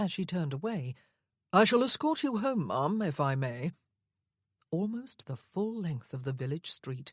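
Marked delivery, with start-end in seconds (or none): 1.5-3.7 raised pitch, haughty, lofty and bored. Narrator reading a line of dialogue addressed to a lady, haughty and bored. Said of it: "a haughty and rather bored voice said".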